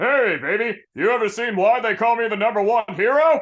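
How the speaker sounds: big, bold, flirting hero tone. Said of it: "All Might trying to flirt, maybe in his big form".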